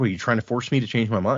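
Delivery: ordinary delivery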